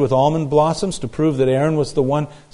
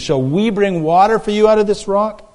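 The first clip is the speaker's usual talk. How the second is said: put-on mocking sarcastic tone, higher; 6 semitones higher than usual. Retelling how he spoke to the people he calls rebels: retelling a mocking, sarcastic line. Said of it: "he speaks mockingly and sarcastically".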